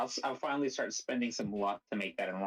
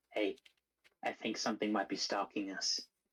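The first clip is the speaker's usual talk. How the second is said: whispering in character. Warning a companion that something is following them: whispering in character. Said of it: "approach Banner and whisper to him".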